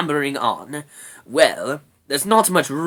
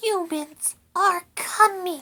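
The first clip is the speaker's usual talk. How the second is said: shrill, piercing, very high squeaking cry. Reading a story aloud, voicing Rat's warning in the cave: Rat's shrill squeak. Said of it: "she squeaked, so shrilly that her voice echoed".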